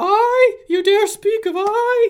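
eerie, spectral, very high ghostly voice. Narrating a scene, the speaker gives Ingester's reply in a ghostly voice. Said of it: "the ghostly voice of Ingester".

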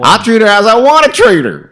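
very loud, shrill, high put-on Southern drawl. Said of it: "we gotta stop doing Southern accents".

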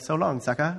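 weird, gloating, sadistic giant voice. Retelling talking to cookies late at night before eating them, in a put-on sadistic giant voice. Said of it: "with some weird sadistic giant voice".

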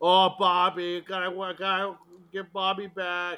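really bad, high, loud, drawn-out put-on Boston accent. Asking whether an actress used a bad accent: imitating Maria Bello's bad Boston accent. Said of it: "a really bad Boston accent".

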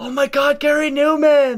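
very high, loud, excited starstruck yell.

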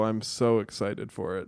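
sarcastic fake excitement. Answering a co-host who introduces the banter segment: sarcastic fake excitement. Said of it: "you don't sound like it".

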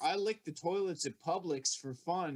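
plain

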